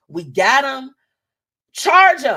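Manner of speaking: high, loud police announcement voice.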